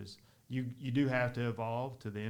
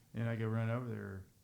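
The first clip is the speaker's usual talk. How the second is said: ordinary talk, nothing marked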